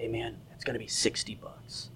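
soft, low whisper.

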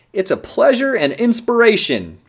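high, loud booming delivery.

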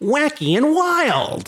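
very high, swooping, over-the-top cartoon villain voice. Introducing the word of the day, the speaker slips into a cartoon villain voice. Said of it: "That's my cartoon villain voice".

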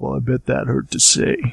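creaky, rough-edged character voice. Quoting a movie line about a thank-you: Riggs impression. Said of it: "I'm doing my, uh, Riggs impression there".

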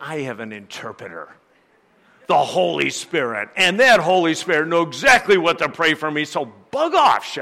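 very smug, self-satisfied know-it-all tone. Retelling a reply to the wife's comment, acting out saying it smugly. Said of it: "very smugly".

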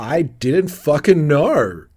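slow, loud, exasperated tone. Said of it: "And Eleanor's like".

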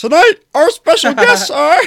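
very high, shrill, loud frog puppet voice. Introducing tonight's special guests to everyone, in a Kermit the Frog voice. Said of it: "critiquing your Kermit the Frog voice".

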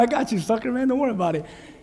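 good-natured, playful, fun teasing taunt. Imitating Jesus smiling at a drowning Peter, teasing as Jesus. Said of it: "He's having fun".

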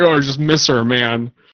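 mock sad drunkenness. Describing a character who turns very sad and drunk, imitating a sad drunk. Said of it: "He immediately goes very sad drunk".

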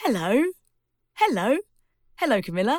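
cheerful, smiling voice. Showing listeners how to say hello with a big smile, smiling while speaking. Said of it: "Make your mouth really, really smile and just say".

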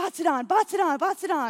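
loud, high-pitched yell.

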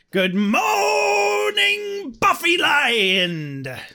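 very high, very slow growl, "Land" drawn out. Trying the greeting again, more growly: growly Smee from Hook voice. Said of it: "let me try again".

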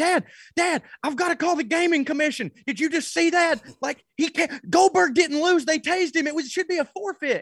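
very high, frantic, freaked-out shrieking. Retelling yelling to dad during a wrestling match, re-enacting screaming at the tv. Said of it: "I'm screaming at the TV".

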